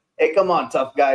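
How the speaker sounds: put-on New York gangster voice. Describing how the Penguin comes across: Penguin as a New York gangster. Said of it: "like this New York gangster. He's like".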